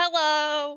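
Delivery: loud, outward shouting yell. Calling out loudly to people in the street: yelling into the streets. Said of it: "Because you're yelling into the streets".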